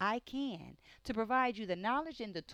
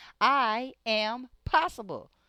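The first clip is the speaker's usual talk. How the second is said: loud, proud, full-voiced, no holding back; 3 semitones higher, 11 dB louder than usual. Leading listeners in a repeated affirmation: saying it loud. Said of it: "Say it loud".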